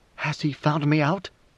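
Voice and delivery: ordinary talk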